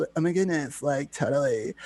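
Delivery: laid-on, put-on California valley-girl voice. Chatting about voices and showing the Cali girl voice: California girl voice. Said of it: "that's like uh you know the the Cali girl voice".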